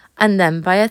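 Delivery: plain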